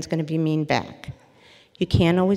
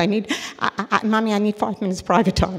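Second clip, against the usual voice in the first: mock tearful crying, choked-up stammering over words; 4 semitones higher than usual. Retelling a grown son's call to his mother, imitating someone choked up crying. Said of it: "he was choked up and crying".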